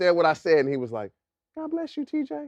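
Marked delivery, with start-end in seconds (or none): 1.6-2.5 very high, hushed, soft-spoken gentle voice. Retelling how one of the nicest guys of all time answered, imitating a man's soft voice. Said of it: "With his soft voice".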